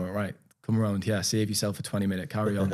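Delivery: ordinary delivery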